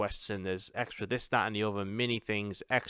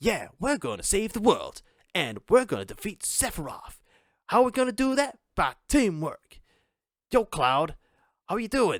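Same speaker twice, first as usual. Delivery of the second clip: cheesy, overly positive, very high hero voice; 11 semitones higher, 7 dB louder than usual. Mocking game dialogue about defeating sephiroth: mock overly positive voice. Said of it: "overly positive sounding".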